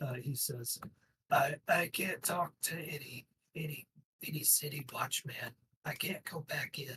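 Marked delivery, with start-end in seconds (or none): 1.3-7.0 close, confidential, intimate orc voice. Narrating a game scene, an orc answers the player: intimate orc voice. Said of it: "in this intimate imitation of an orc's voice".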